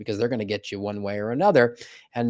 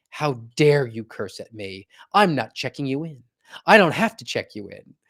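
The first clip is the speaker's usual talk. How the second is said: mock shocked, indignant, outraged gasp. Retelling a customer's story of what the lady said, imitating an outraged gasp. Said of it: "took a step back and gasped and was like".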